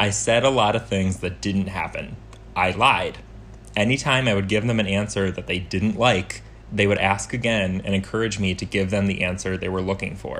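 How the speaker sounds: ordinary talk, nothing marked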